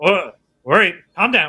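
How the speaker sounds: muffled voice dulled through layers of filters. Game master voicing a helmeted figure calming a robot, muffled voice through helmet. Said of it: "His voice is kind of muffled, like it's through several layers of filters".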